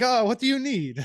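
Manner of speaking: put-on vague, made-up European accent, very high-pitched. Imitating a player who ran over like a little waiter: put-on random European accent. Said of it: "is that your Norwegian accent".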